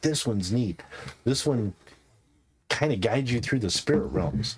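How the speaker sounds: plain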